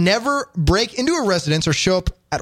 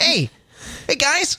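put-on high, childlike little kid voice; 6 semitones higher than usual. Showing off a kid voice that others like: kid voice. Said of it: "They like my kid voice".

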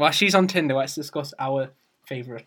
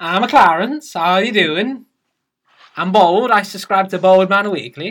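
bad, fake Swedish accent, louder; 5 semitones higher, 8 dB louder than usual. Asked how a Swedish person talks, speaker tries a fake Swedish accent. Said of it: "how does a Swedish person talk again?".

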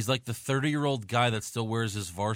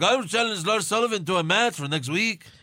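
loud, very high put-on Latin American accent; 10 semitones higher, 6 dB louder than usual. Retelling what he said after getting beaten up, Latin American accent. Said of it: "you can use a Latin American accent".

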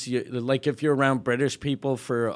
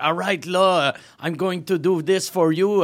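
high, put-on English-dude accent; 5 semitones higher, 5 dB louder than usual. Imagining a politician pandering to a community: imitating an english accent. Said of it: "English dude ... speaking like".

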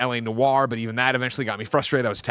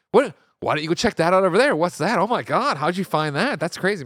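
high, patronising, condescending talk-down; 6 semitones higher, 3 dB louder than usual. Acting out people who treat you like a 10-year-old, imitating talking down to a child. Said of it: "treating you like a 10-year-old".

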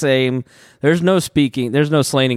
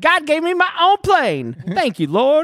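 put-on animated, high Louisiana accent; 14 semitones higher than usual. Retelling what a TV preacher says on air: Jesse Duplantis impression, Louisiana accent. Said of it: "Jesse Duplantis gets on there and he's like".

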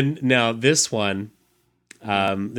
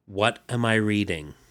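usual speaking voice

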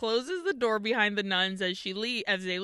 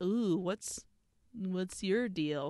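creepy, eerie, unnerving voice; 2 semitones lower, 4 dB quieter than usual. Retelling a film scene, voicing Alucarda looking at Justine: creepy Alucarda voice. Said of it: "looking at her, like, creepily".

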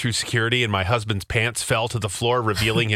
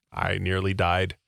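ordinary talk, nothing marked

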